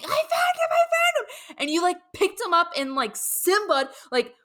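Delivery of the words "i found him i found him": very high, thrilled, squealing excited shriek. Retelling finding a lost child asleep in the basement: imitating someone screaming excitedly. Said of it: "you were so excited that you found him that you were screaming".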